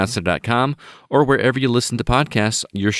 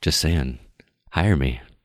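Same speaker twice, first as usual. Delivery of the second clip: put-on sexy voice, lower and quieter; 7 semitones lower, 3 dB quieter than usual. Telling anyone hiring Wayne to hire them instead, in a put-on sexy voice. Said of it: "this is my sexy voice".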